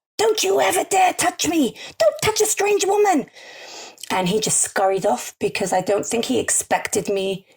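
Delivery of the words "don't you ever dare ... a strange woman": very high, piercing yell, acted out. Speaker retells yelling at a stranger who touched her, retelling her own yell. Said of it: "And I yelled".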